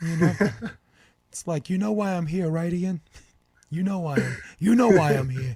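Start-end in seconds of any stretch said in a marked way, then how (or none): 1.7-5.6 man's voice with a Brooklyn accent. On a podcast, sounding like the Brooklyn guy you owe money to. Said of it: "the guy from Brooklyn that you owe money to".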